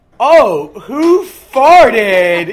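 loud, very slow, sheepish and innocent. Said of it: "sheepishly just goes".

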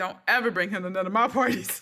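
mock-deadpan, flat delivery. Retelling what a guy told Sabria about his parties, imitating his deadpan. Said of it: "he's very like deadpan".

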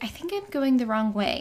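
ordinary delivery

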